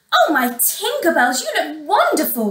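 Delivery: gasped out. The stepsisters' mother speaks to her daughters at the mirror, gasping. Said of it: "gasped their mother".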